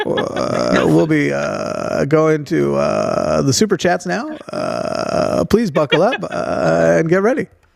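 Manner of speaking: airline pilot intercom announcement voice. Announcing the move to the super chats, joking: airline pilot announcement voice. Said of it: "do it like a pilot?".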